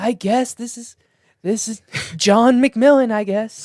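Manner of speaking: bad announcer voice, very high and loud. Imagining the announcer introducing a comic at an open mic: shitty Adrian impression. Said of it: "I'm just doing a shitty impression".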